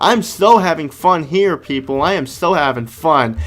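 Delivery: ironic, sarcastic tone meaning the opposite. Playing a boring game level, claiming to enjoy it: sarcastic tone. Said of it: "the sarcastic tone of my voice".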